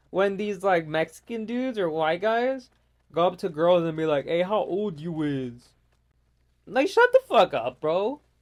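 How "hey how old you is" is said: slow, put-on hard tough-guy street talk. Imitating guys who go up to girls, mocking a fake-tough voice. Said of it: "trying to act like something you're not".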